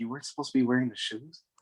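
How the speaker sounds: hushed, whispered stage whisper. Playing a character who asks another character about the shoes: whispering in character. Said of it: "Varric kinda whispers to Jack".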